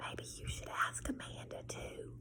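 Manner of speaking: whispering. Narrating a story: a woman points to the back of the library and whispers.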